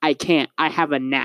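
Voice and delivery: ordinary delivery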